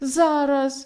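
exclaiming eagerly. A goat answers the fox's invitation into the well, exclaiming. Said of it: "вигукнув цап".

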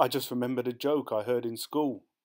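ordinary delivery

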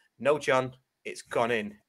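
acted, flat deadpan delivery. Retelling how they corrected someone about a goal, retelling own deadpan reply.

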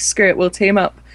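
ordinary talk, nothing marked

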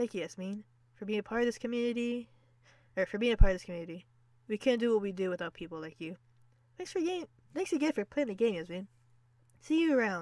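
tearful voice, speaking while crying. Reading a thank-you message aloud from the game: crying while reading. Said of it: "I'm crying. I'm crying a lot".

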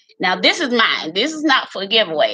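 ordinary delivery

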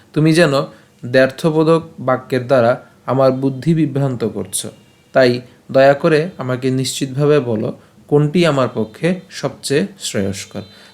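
usual speaking voice

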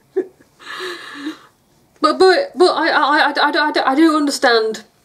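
flustered, high, stammering through a laugh.

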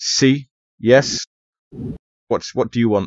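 curt, brusque voice, spoken slowly. Voicing a desk sergeant who looks up at visitors: brusque desk sergeant. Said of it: "rather brusquely goes".

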